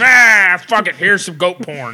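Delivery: put-on very loud tipsy outburst. Riffing on what Bing would say, in a mock half-drunk Bing voice. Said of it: "he's half drunk?".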